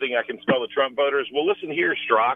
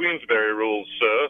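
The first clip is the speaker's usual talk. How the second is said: slight, light put-on English accent; 4 semitones lower than usual. Mocking a senator's old-fashioned fair play with a slight English accent. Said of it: "saying with the slight English accent".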